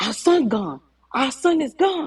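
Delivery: high-pitched scream, held back. Retelling a phone call where a father screams the news: imitating someone screaming. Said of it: "All I hear him screaming".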